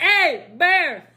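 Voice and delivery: put-on Louisiana accent. Recalling how everybody reacted to seeing bears on a hike, Louisiana accent. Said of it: "With a Louisiana accent".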